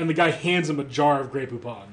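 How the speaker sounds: ordinary delivery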